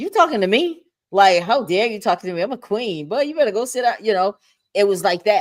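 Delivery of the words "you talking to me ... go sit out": haughty, dismissive, sassy, disrespectful tone. Retelling how she would answer a man at twenty: imitating her past disrespectful attitude. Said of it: "I'm not trying to be disrespectful".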